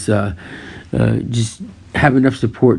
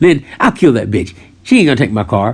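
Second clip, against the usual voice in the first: mock-flippant, offhand delivery, faster pace. Speaker retells their reply on hearing their mother would take their car: retelling a flippant remark. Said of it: "In a flippant manner, though".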